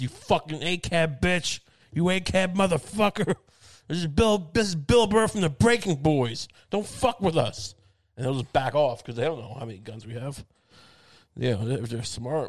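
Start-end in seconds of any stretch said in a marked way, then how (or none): 0.0-7.7 mock yelling, higher. Acting out threatening cops for a joke: pretend screaming at cops. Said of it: "Just screaming at cops".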